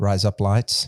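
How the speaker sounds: put-on Australian accent. Coaching the other speaker into the accent, the speaker says the phrase in an Australian accent. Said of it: "you know the way to get into an Australian accent".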